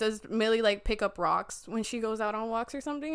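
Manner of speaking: ordinary talk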